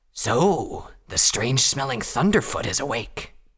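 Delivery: rasping, hoarse, wolf-like creature voice. Narrator reads a wolven speaking to the Thunderfoot who just woke, rasping wolven voice. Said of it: "the wolven rasped".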